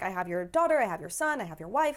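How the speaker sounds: ordinary delivery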